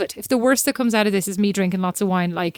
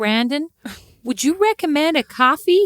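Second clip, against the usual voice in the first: practised put-on American accent, pitched up; 6 semitones higher than usual. Trying out how Americans would ask for a recommendation, in an American accent. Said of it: "for that amazing American accent".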